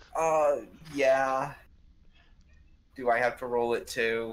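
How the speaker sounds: deflated, disappointed, let-down tone. Told to just take the damage, a player asks about rolling: disappointed. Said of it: "you sound so disappointed there".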